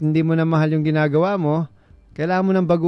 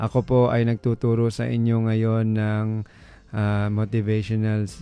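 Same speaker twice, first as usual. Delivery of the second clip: low, flat monotone, one unvarying tone throughout; 6 semitones lower, 4 dB quieter than usual. Demonstrating monotony while explaining the need for prosody: flat monotone. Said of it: "monotone, one tone, isang tunog. Parang ganito yan".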